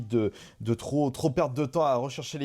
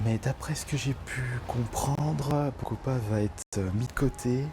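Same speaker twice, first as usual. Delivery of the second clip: spoken in a whisper. Filming in a shop aisle, whispering. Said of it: "chuchote et tout".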